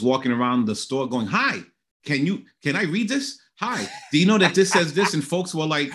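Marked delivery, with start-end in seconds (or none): 1.3-5.1 put-on bubbly, eager, excited chatter. Retelling reading labels aloud to folks in a store: retelling own excited chatter. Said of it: "I was just so excited".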